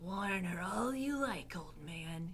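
soft half-whisper with no voice. Reading Roscuro, hidden beneath Mig's skirts, speaking of the old man: half-whispered. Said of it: "he whispered".

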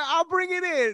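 high, mocking imitation voice.

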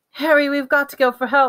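high-pitched, gasping, breath caught. Hermione, bleeding, tells Harry they must go for help: gasped. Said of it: "Hermione gasped".

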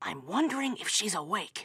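hushed whispering voice. Asking another speaker whether she is awake: whispering. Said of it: "I'm whispering".

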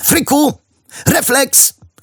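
yelled out, pitched very high. Tossing something toward a friend, a boy calls out, shouting. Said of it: "Krzyknął Kappa".

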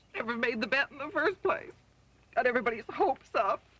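tearful, weeping through the words. As the aunt being consoled after the theft, crying. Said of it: "don't cry".

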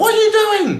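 put-on very high, shrill, furious screaming. Retelling how a woman who had given instructions screamed at the speaker: imitating a woman screaming angrily. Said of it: "like really screaming at me".

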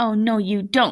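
ordinary delivery

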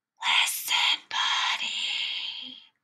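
soft, hushed, breathy whisper. Reading a story aloud, the parents try again with Buddy: whispering. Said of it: "They tried whispering".

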